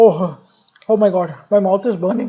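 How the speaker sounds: nasal burnt-mouth voice. Demonstrating how someone speaks with something hot in the mouth, talking with hot food in mouth. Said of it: "If I put anything hot into my mouth, how will I speak?".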